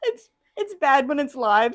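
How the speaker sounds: high, giggly talking through the giggles. Teaching live and fumbling a moment, giggling while talking. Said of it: "I've got the giggles now".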